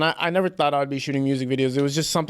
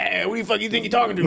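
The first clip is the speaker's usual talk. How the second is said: put-on crazy cocky voice, higher pitch; 6 semitones higher than usual. Retelling an old character act, imitating an uncle: crazy cocky voice. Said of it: "with a crazy voice and a crazy cockiness".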